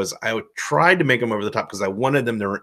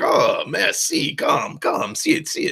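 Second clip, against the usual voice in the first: slow, unhurried put-on French accent. Retelling his reply to a man switching between Italian and French, mock French accent. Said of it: "and he's French. You know, I'm like".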